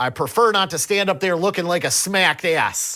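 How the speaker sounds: heavy put-on Pennsylvania accent, loud, high. Repeating a woman's line that made you pause and die laughing, in a thick-ass Pennsylvania accent. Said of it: "in this thick-ass Pennsylvania accent".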